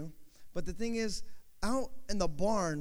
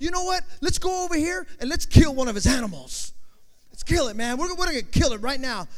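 mock-furious ranting outburst, louder; 6 semitones higher, 8 dB louder than usual. Retelling a man's angry outburst to Billy, mock-furious outburst. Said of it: "I'm so mad".

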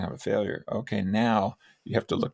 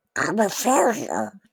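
put-on cartoon duck voice; 13 semitones higher, 5 dB louder than usual. Suggesting ways to defuse a negative thought, saying it in a Donald Duck voice. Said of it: "in a Donald Duck voice".

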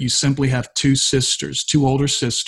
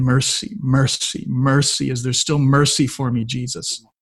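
imitated desperate crying out, pleading tone. Retelling a school teacher beating the altar steps: imitating crying out for mercy. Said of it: "she's crying out saying".

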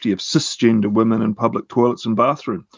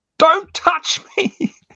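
put-on acted, shrill, very high little child's shrieking scream. Retelling a two-year-old daughter's outburst in the men's room: imitating a child screaming.

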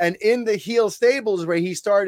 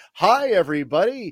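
put-on jolly, do-good wrestler voice. Retelling how a wrestler first introduced himself: imitating jolly do-good Rocky Maivia. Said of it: "this do-good, jolly".

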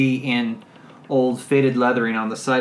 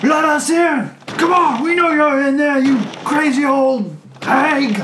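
shrill, high, loud hollering; 14 semitones higher, 6 dB louder than usual. Voicing young men pounding on a door at a house: yelling. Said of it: "pounding on the door and yelling".

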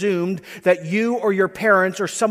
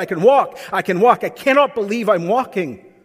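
usual speaking voice

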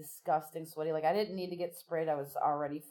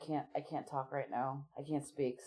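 put-on, choked-up voice, faltering and catching with emotion; 2 semitones lower, 5 dB quieter than usual. Retelling how Joe choked up during the thank yous: imitating Joe choking up. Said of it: "he would just choke up".

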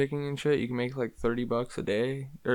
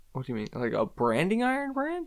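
high, swooping, frightened, startled, disbelieving tone; 5 semitones higher than usual. Asking another speaker about getting a branding iron brand, sounding scared. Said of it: "don't sound so scared".

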